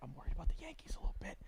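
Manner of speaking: hushed, breathy, confiding whisper. Admitting a worry the speaker hates to say aloud, whispered. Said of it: "I'm going to whisper it".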